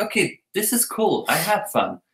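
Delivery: normal talking voice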